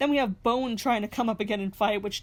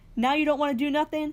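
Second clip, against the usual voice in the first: livid yet mild mock scream.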